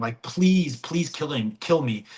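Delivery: mock-tearful, crying, begging, pleading voice. Retelling a movie scene where the captain begs to be killed, imitating someone crying, begging. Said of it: "He's he's like crying".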